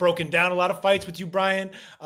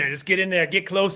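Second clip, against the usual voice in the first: plain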